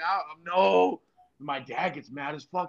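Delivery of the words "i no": acted, tearful, high, sobbing crying voice. Retelling telling the dad no: imitating own past crying. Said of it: "I'm crying".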